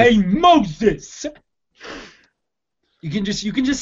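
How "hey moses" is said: put-on called out in a New Jersey accent. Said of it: "say Moses in a New Jersey accent".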